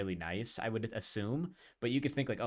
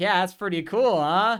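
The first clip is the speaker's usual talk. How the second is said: very loud, very high-pitched bellowing blare; 9 semitones higher, 12 dB louder than usual. Retelling a prank video, imitating Tom Green speaking really loudly. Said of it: "really loudly".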